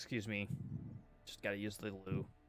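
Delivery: hushed whispered voice. Getting up as a play starts, the character slips out: quietly excusing yourself. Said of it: "just get up and quietly be like".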